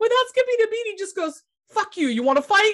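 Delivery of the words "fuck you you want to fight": mock crazed, manic blurt with no pause. Retelling a driver's reply to a honking car: imitating Danny, manic. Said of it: "he's rambling this crazy nonsense and he's manic".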